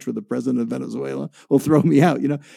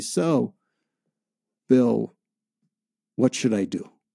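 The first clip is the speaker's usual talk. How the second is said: mock worn-out, weary, tired tone; 3 semitones lower, 3 dB quieter than usual. Retelling what he said after his shoulders sank: imitating a weary tone. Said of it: "in a weary tone of voice".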